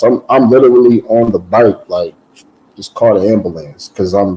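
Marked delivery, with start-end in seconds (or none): none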